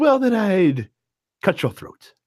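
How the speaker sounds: straight-faced menacing delivery with a touch of malice. Retelling a character's reply to his partner, with a hint of malice. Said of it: "says it with a hint of malice in his voice".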